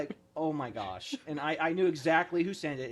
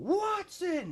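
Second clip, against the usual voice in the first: put-on, very high, screamed drill-sergeant voice; 14 semitones higher than usual. Retelling a drill sergeant calling out the name: imitating a drill sergeant screaming. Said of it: "I just hear the drill sergeant screaming".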